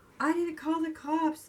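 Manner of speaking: play-acted, high, begging, pleading voice. Retelling how a woman begged a man to open the door, imitating her begging. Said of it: "she was like begging and pleading".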